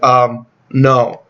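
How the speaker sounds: plain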